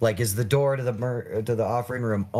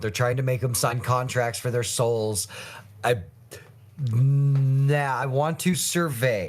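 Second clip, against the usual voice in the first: plain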